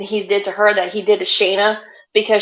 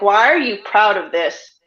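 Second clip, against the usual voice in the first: acted disapproving father voice. Retelling a backstage moment: imitating Sheamus disapproving. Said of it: "Sheamus is just looking at him like".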